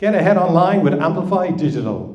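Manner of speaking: deliberate sales-pitch delivery. Speaker on stage repeating a tagline to an audience with eyes closed; smiling while speaking. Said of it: "The difference there is I smiled".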